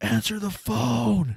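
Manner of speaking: mock scream, very high pitched and loud. Recalling a guy who started screaming in the night, imitating someone screaming. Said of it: "this dude starts screaming".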